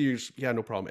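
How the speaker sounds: plain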